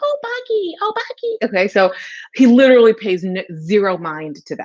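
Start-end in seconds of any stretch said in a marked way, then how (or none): 0.0-1.4 put-on really squeaky kid's voice, very high pitched. Describing how the kids in the house call out, in a really high squeaky voice. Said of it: "they have this really high squeaky voice".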